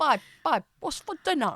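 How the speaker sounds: bad, exaggerated caricature of own accent, high, swooping. After teasing a co-speaker's bad accent impression: bad impression of own accent. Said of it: "Can you impersonate your own accent so badly?".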